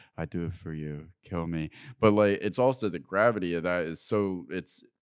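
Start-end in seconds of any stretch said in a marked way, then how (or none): 0.2-1.8 drained, flat, emotionless monotone. Retelling a wounded soldier's words to his carrier, with almost no emotion. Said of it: "almost no emotion because he has nothing left to give".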